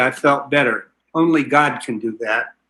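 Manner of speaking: plain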